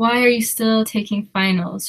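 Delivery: ordinary talk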